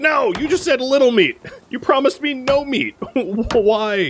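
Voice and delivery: exasperated, high-pitched protest.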